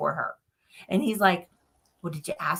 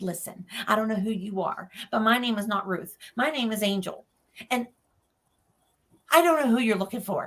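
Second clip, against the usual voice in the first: acted, heated, angry arguing retort; 2 semitones higher, 3 dB quieter than usual. Retelling fighting with a spirit in the hallway: imitating arguing angrily. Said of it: "I'm fighting with this spirit".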